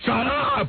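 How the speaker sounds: high, shrill, strained outburst. Imitating how Richard's voice gets shrill: Richard's shrill strained voice. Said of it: "He gets a shrill thing in his voice. He goes like this".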